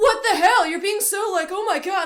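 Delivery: loud, high-pitched indignant outburst.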